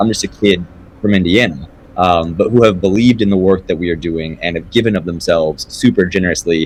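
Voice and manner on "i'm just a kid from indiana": plain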